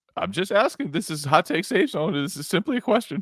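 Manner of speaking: nervous, scared, tentative, timid tone. During a sports segment, the speaker poses a question: scared, timid asking. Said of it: "You sound so scared asking".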